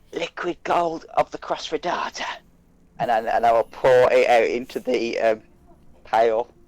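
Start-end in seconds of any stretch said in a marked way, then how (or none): 0.1-2.2 soft whispered incantation. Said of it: "I'll lean in and whisper".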